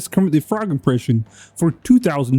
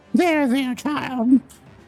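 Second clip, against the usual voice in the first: put-on, very high elderly woman voice; 10 semitones higher, 3 dB quieter than usual. Showing off a voice they can do: put-on old woman voice. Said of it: "I can do an old woman voice".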